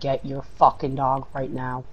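ordinary talk

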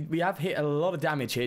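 ordinary talk, nothing marked

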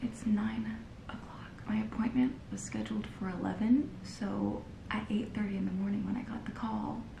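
soft unvoiced whisper. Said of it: "I'm whispering as if he's still in here".

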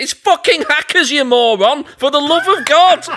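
shrill, very high, loud yell. A listener recalls shouting at their phone during the podcast: retelling own shouting. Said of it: "the same shouting that I was doing".

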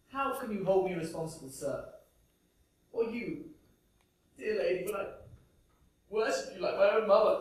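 weeping while speaking. Character protesting to an inspector and a lady, crying while talking. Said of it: "Crying, yes, crying because I was wrong".

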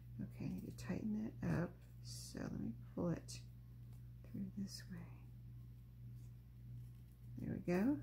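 speaking a little quietly. Pulling a piece through to tighten it while concentrating, talking a little quiet. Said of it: "Sorry if I'm talking a little quiet".

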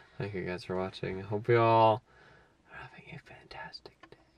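hushed whispering. Signing off to viewers from the car: whispering. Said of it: "Did you have to whisper it?".

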